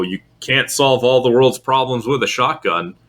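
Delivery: ordinary talk, nothing marked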